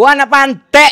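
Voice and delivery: high, loud, slow shouted delivery.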